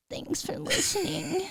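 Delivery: playful moan voice. Podcast host thanking listeners just for fun, moan voice. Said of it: "in the moan voice".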